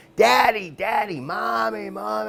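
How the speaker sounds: put-on very high, drawn-out little kid's scream. Recalling being a kid with burning eyes, calling for parents, retelling screaming as a kid. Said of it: "and I'm fucking screaming. I'm like".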